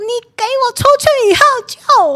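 put-on very high, shrill, furious scolding yell. Retelling scolding a husband during a quarrel: imitating an angry scolding yell. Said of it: "很生气的大骂说".

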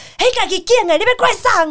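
put-on roar. Retelling how the speaker's mother roared at them in the living room, imitating mom roaring. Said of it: "对着我咆哮说".

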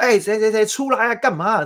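play-acted very high, furious angry shout. Acting out someone whose boat was hit: acting out an angry yell. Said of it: "你这时候会很生气".

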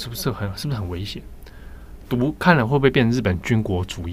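plain

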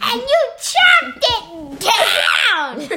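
shrill, very cross, furious shrieking bird voice. Reading a story, voicing the small cross bird speaking to Jim, shrieking, very angry bird. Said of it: "You sounded very angry, bird".

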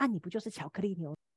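put-on whisper. Retelling what a senior suddenly said close beside them: imitating a whisper. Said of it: "突然小小声的在我旁边讲说".

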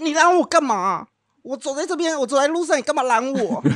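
put-on, full-on, bellowed, high-pitched yelling. Retelling how a father suddenly yelled at his son: imitating someone yelling. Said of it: "不知道他在吼什么".

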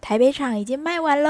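smug, boastful tone. The speaker retells how someone proudly announced that tickets for a show sold out, imitating that proud, smug tone. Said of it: "就很骄傲地讲说".

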